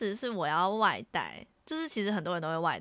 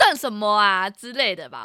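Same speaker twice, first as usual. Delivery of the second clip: mock-loud, acted speech, much louder; 2 semitones higher, 10 dB louder than usual. Retelling what a line-cutter said after being glared at, acting out loud speech. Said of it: "他是大声的，".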